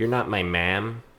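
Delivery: put-on thick Milwaukee accent. Imitating an actor's distinct accent from a series: thick Milwaukee accent like Evan Peters. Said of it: "that thick Milwaukee accent".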